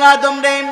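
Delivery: loud, high-pitched calling out.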